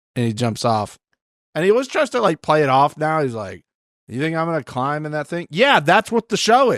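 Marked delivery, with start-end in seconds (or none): none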